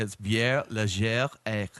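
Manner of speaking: French-style pronunciation. Reading a beer name aloud so others can try it, French pronunciation. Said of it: "Let's pronounce the way you pronounce it".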